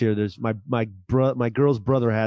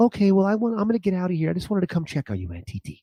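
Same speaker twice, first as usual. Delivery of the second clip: put-on cute little girl voice, much higher; 7 semitones higher than usual. Retelling a little girl checking on her aunt, cute little girl's voice. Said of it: "she's just a little cute ass voice".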